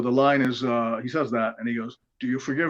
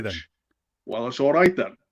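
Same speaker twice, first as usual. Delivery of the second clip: bad put-on London accent. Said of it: "I'm gonna do a bad Michael Caine".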